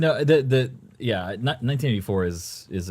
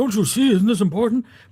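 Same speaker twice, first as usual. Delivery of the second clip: put-on very high, loud, impassioned old-man voice; 14 semitones higher, 6 dB louder than usual. Describing the audiobook read by Ray Bradbury: Ray Bradbury impression. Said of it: "He's like".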